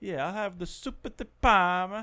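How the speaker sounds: high, slow, exaggerated Italian accent.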